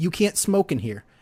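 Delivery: normal talking voice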